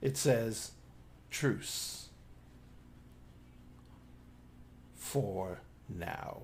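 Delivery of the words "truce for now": chilly whispered voice, all air. Voicing a presence speaking into a mind: cold, airy whisper. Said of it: "In a very cold and airy whisper of a voice".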